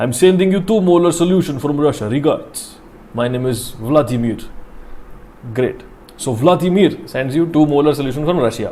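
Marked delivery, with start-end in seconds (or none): 0.0-4.4 put-on Russian accent. Voicing a sender from Russia in an example, Vladimir, put-on Russian accent. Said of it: "that Russian accent".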